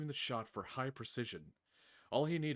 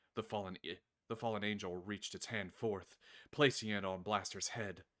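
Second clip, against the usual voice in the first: usual speaking voice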